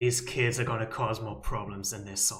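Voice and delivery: low, rasping, raspy narrator voiceover voice. Setting up a voiceover for the scene, raspy voiceover voice. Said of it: "it seems like a rasp voice going".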